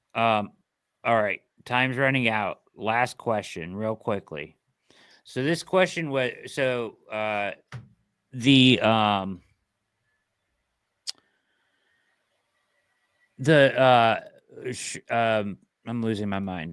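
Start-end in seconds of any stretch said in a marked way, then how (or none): 5.2-16.7 slow, halting stammer, stuttering through filler sounds. A host, with time running out, fumbles a last question: stuttering, halting speech. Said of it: "I apologize for my stuttering and my incoherent uh, noise making".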